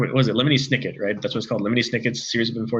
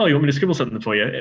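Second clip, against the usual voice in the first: put-on British accent; 3 semitones higher than usual. Retelling a signing where the author spoke, in Neil Gaiman's British accent. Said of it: "in his British accent".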